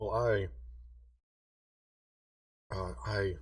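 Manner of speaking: hushed whispering voice. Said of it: "he's kinda whispering to y'all".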